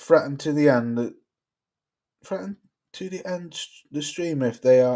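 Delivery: normal talking voice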